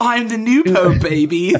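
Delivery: very loud, high, slow comic character voice. Reacting to a remark, doing an Austin Powers voice. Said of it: "That's like almost Austin Powers' voice".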